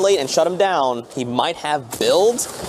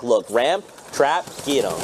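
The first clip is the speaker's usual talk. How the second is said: usual speaking voice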